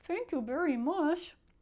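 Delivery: through clenched teeth. Reading a story aloud, a character gives thanks through clenched teeth. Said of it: "through his clenched teeth".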